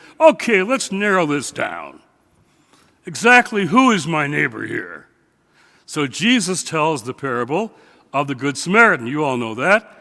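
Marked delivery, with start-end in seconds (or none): 0.2-5.1 mock lawyerly, precise, narrowing-down tone. Acting out the lawyer questioning Jesus in the parable, in a Washington lawyer tone. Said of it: "I recognized that tone of voice, I knew it was a Washington lawyer".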